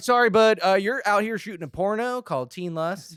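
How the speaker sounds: put-on Southern accent. Retelling what the border patrol officers said: imitating border officer, southern accent. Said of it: "I don't know why the Canadians sound Southern".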